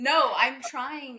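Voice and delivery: deliberately loud speech.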